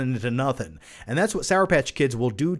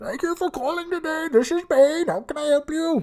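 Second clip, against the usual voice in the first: very high-pitched Indian accent; 13 semitones higher than usual. Answering a listener's question, playing Bane as a tech support agent, Indian accent. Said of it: "Bane has an Indian accent in his tech support".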